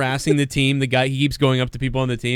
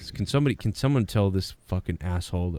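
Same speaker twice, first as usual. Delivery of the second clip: put-on coach muttering under breath, lower, quieter; 6 semitones lower, 6 dB quieter than usual. Imitating Belichick cursing at a player: Belichick muttering under his breath. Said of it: "under his breath, he's like".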